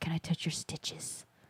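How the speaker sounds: hushed, whispered creepy voice. Retelling what he said, imitating him in creeper mode. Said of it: "was he on creeper mode".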